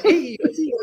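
high, stiff, proper-sounding delivery.

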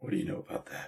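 hushed, breathy, put-on superhero voice. Retelling a scene where someone turns around to question a cop; Lego Batman voice. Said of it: "And in Lego Batman voice".

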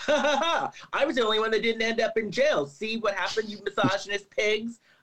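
high, laughing, smirking gloat. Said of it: "She's probably there smirking".

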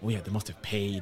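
mock, put-on whisper. Describing rumors spreading about the team: imitating a whisper. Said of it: "You can hear a few like whispers".

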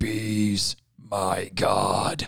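very deep, gruff, rough caped superhero voice. Retelling a comic-book panel, in the Batman voice. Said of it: "I have to do it in the Batman voice".

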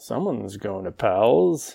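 put-on muttering under the breath. Retelling what a person in the elevator said: imitating someone muttering under his breath. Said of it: "under his breath".

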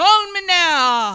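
put-on Jamaican accent. Asked by a co-speaker to do the accent, the speaker tries a Miss Cleo accent. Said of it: "Can you do the accent?".

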